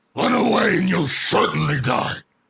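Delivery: gruff warrior voice, high and loud.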